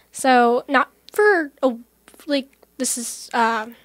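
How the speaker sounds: halting stutter, stammering. Answering an interviewer's question about writing songs, stuttering. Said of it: "I'm stuttering".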